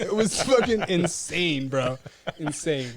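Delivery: ordinary talk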